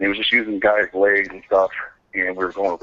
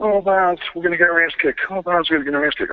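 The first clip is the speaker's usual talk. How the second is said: very high, whining moan; 9 semitones higher than usual. Retelling a locker room moment, Stone Cold crying the blues. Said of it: "he's in there crying the blues".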